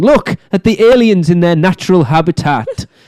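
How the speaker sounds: acted, high loud calling out. Retelling what a team member called to people going past: imitating someone shouting. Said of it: "he was shouting".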